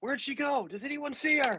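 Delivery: shouting, pitched very high, carrying. Calling out in character to find someone who vanished: yelling. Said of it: "I'm gonna yell out".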